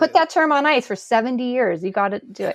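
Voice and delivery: ordinary talk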